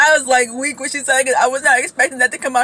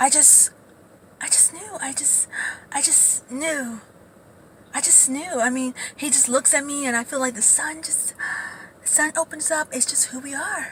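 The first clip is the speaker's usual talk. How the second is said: very soft, breathy, whispery fake voice, no bass; 11 dB quieter than usual. Imitating the wife who married her cousin, soft fake tone. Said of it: "this is exactly how the wife sound".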